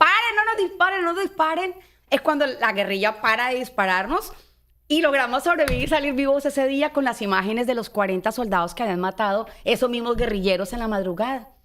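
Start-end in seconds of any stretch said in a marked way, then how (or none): 0.0-1.8 put-on yell, higher. Retelling being shot at, waving a jacket: retelling a shout. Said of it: "cuando empiezo a gritar tanto".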